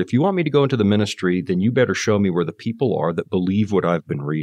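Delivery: ordinary delivery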